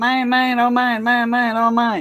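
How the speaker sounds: tiny, squeaky, high-pitched little cartoon duck voice. Retelling a cartoon where the duck is greedy for a diamond: squeaky Daffy Duck voice. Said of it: "His little squeaky voice".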